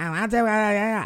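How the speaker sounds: high-pitched, whiny, nagging voice.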